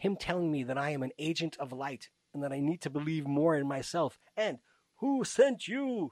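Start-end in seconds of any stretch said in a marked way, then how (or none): 5.0-6.1 high, loud put-on French accent. Speaker retelling what a man kept asking her, French accent. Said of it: "with a French accent".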